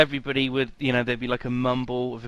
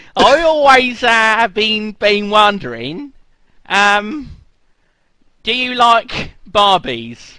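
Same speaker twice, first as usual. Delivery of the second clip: put-on terrible Australian accent, very high, very loud; 9 semitones higher, 10 dB louder than usual. Asking a question after apologising for your accent, use a bad Australian accent. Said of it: "terrible accent. Terrible. I apologise".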